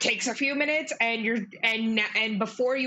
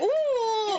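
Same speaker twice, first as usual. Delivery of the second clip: very high, drawn-out dramatic moan; 12 semitones higher than usual. Voicing a poisoned toad in pain: moaning loudly, super dramatic. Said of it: "moaning really loudly".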